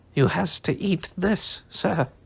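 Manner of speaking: squeaky, little house-elf voice. Narrator reading the house-elf's reply to Harry, in squeaky Dobby voice. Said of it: "squeaked the elf".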